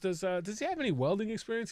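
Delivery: ordinary talk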